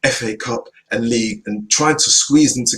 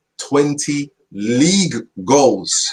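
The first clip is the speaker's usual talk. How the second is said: very slow, deliberate, each word said separately; 4 semitones higher than usual. Speaker insisting a team needs a striker, saying it very slowly. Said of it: "I'm saying this very slowly for the hard of hearing".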